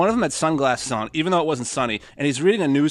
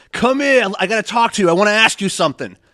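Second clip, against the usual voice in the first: loud, high-pitched hollering; 6 semitones higher, 7 dB louder than usual. Retelling how a man at a bus stop calls people over: imitating a man yelling. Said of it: "always yelling at people".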